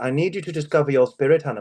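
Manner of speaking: upper-crust, posh voice. Retelling what his gym's personal trainer said, in a posh trainer impression. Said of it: "this posh trainer guy".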